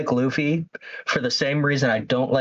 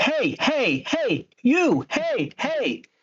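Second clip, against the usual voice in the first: put-on hyper cartoon voice, higher; 12 semitones higher than usual. Mocking how the dubbed Luffy talks: imitating dub Luffy's personality. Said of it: "it's very".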